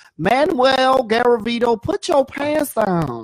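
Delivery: high, lisping, twangy preacher voice. Recalling a man from their childhood church, doing a lisping, twangy pastor impression. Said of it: "That's actually a very good impersonation".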